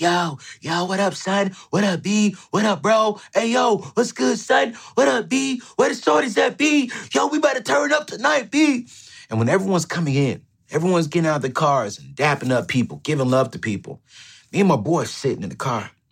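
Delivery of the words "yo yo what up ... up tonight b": very high, rowdy, drawn-out hype yelling. Retelling friends arriving at a meetup: imitating friends screaming greetings. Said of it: "everyone's screaming like".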